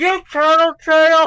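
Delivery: very high, very loud, shrill, acted, mouth stuffed. Retelling a kid on the bus answering with his mouth full: imitating Joey's full mouth. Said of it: "this mouthful of food goes goes".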